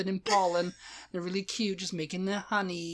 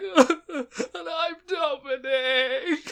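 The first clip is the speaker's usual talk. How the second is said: very high, loud, weepy sobbing voice; 9 semitones higher, 7 dB louder than usual. Imagining a future podcast intro, the speaker says his own name in a mock crying voice. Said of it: "And you'll be like, stop crying".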